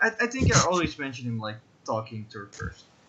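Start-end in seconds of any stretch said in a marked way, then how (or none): none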